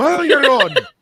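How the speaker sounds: put-on high, loud Irish accent in an old man voice. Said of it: "that's how my grandfather sounded".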